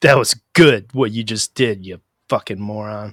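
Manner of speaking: put-on sarcastic tone. Showing how to praise another driver: imitating snarky praise. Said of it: "with a real snarky smirk on my face".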